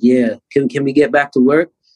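ordinary delivery

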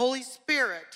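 loud shout, called out at full voice. Speaker retells holding a dead man's feet and calling out; retelling a loud shout. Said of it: "And I said this so loud".

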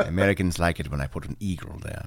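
very deep, low-pitched voice. Joking about a film as its director: Alfred Hitchcock voice. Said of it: "He talks like that in my mind".

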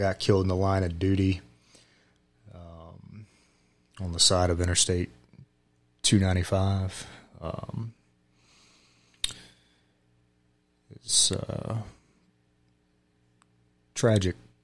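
choked-up voice catching with emotion. Telling podcast listeners about a close friend killed on duty, choked up. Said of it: "I'm already going to get choked up here".

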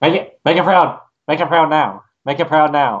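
over-excited, amped-up, totally hyper, wound-up urging. Continuing the impression, getting more hyper: hyper Monty impression. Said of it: "he just gets more and more hyper".

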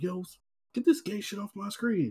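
put-on frantic panic, high and hushed. Retelling clicking away pop-ups on the screen, acting out own panic. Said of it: "I'm like panicking".

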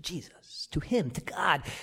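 hushed, whispered voice.

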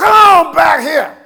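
loud, high-pitched country folk holler. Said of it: "When they holler".

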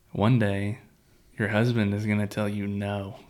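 usual speaking voice

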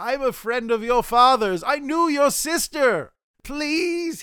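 high, rising pleading voice.

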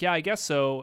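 plain

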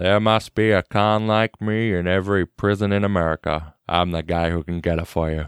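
slow, unhurried movie narrator voice. Doing a narration quote from a film: Morgan Freeman impression. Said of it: "here's where we get our first Morgan Freeman narration".

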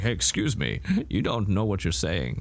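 animated put-on voice swooping up and down in pitch. Retelling how Patrick Stewart corrects someone in the movie: attempted Patrick Stewart impression. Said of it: "I wish I could do a Patrick Stewart impression".

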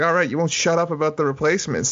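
plain

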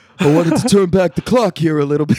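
put-on showman comedian stage voice, announcer style. Retelling a comedian's bit: imitating a comedian's put-on stage voice. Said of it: "and he's like".

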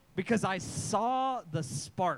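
very slow, drawn-out, slow-motion delivery. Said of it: "time slows down".

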